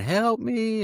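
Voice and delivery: very high, shrill screaming cry. Retelling walking back injured through a neighborhood: imitating own past screaming. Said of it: "I'm just screaming".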